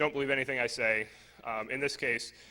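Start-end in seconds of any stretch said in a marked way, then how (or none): none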